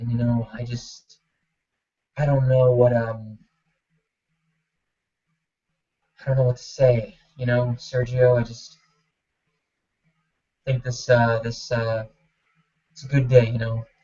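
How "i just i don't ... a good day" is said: very slow, crawling, drawn-out words. Explaining interview impressions, imitating someone who is talking really slow. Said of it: "talking really slow".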